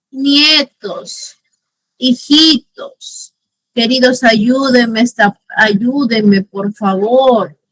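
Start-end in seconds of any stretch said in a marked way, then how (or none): none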